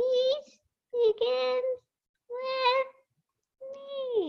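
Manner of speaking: squeaky little mouse voice, very high, very slow. Leading listeners to repeat the phrase with hand motions, saying it like a mouse. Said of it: "let's say it like a mouse".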